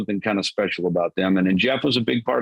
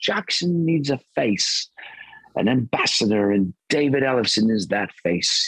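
put-on British accent; 2 semitones higher than usual. Quoting what a man said when he set the marching orders, British accent. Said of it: "in his British accent".

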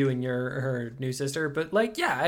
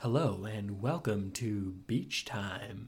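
public-access radio announcer delivery, low and slow; 5 semitones lower, 7 dB quieter than usual. Showing how an intro should sound: NPR radio host style. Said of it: "a N P R sort of".

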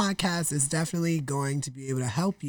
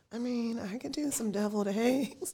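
soft, sheepish, self-conscious tone, pitched up; 6 semitones higher, 6 dB quieter than usual. Recalling ordering appetizers for everyone, retelling a sheepish offer. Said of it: "I just sheepishly said".

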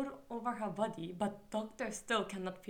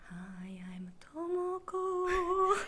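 eerie, spooky voice with raised pitch; 8 semitones higher than usual. Podcast co-hosts redo their intro, this time in a spooky voice. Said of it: "let's do it again, but like spooky".

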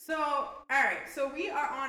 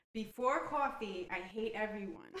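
normal talking voice

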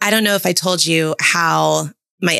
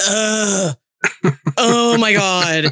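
put-on angry complaining groan, higher; 3 semitones higher than usual. Retelling how the eldest daughter reacted to the movie: imitating daughter's angry complaining. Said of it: "she gets so angry".

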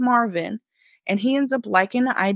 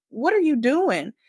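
play-acted, held-back, high-pitched, mild yelling; 6 semitones higher than usual. Retelling a woman shoving off a man who tried to kiss her, retelling her yell. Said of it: "she starts yelling like".

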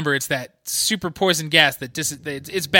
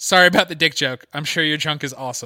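mock, dead-flat, deadpan monotone. Retelling a line from a show: Monster Girl's flat deadpan tone. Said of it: "like, the flattest tone".

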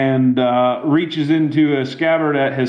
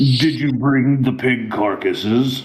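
voice of an undead corpse from beyond the grave. As game narrator, voicing an animated corpse addressing the players, a voice from beyond the grave. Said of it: "in a voice from beyond the grave".

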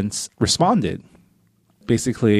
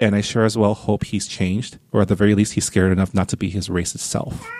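normal talking voice

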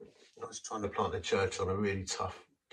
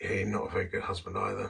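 put-on whispered voice. Retelling what a whisper in the heart said: imitating a whisper. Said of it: "this little whisper went".

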